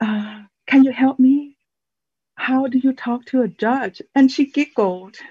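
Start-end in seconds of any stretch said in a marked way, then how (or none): 0.0-4.0 near whisper, slightly higher pitch. Retelling asking a court clerk for help on the phone: retelling an almost-whisper. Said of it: "almost whispering".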